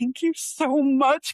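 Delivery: acted tearful crying, heartfelt, loud and slow. Retelling thanking someone who offered free help: retelling crying while thanking. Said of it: "literally crying at work in the closet".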